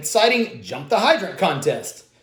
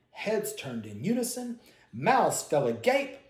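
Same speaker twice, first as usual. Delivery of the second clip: plain reading voice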